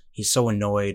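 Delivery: ordinary delivery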